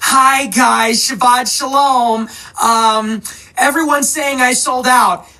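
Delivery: hesitant, uneasy, slow and nervous voice. Mocking a commentator's new tone after being called a sellout: nervous Candace Owens impression. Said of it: "Candace Owens who is sort of nervous, saying".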